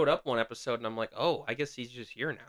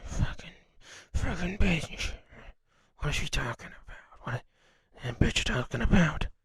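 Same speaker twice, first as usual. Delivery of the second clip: put-on, low, grumbling, angry muttered curses; 5 semitones higher than usual. Retelling what a man on the bus said: imitating a man muttering angrily. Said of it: "a man muttering on the bus".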